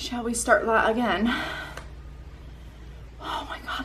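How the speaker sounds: breathless, winded. Restarting a channel video intro, out of breath. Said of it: "I'm out of breath already".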